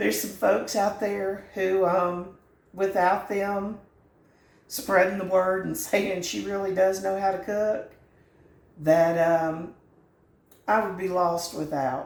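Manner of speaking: emotional, choked-up voice, catching and breaking. Cooking video host thanking the people who spread the word, choked up. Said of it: "I'm getting choked up".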